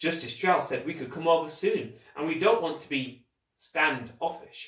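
plain reading voice

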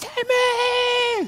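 high, distant-sounding call. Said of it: "She's calling".

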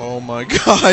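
talking through a high, loud laughing fit.

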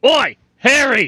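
shrill, high, loud yell. Calling out in character to harry, who flew off on the dragon: yelling. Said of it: "I'll just yell at Harry like".

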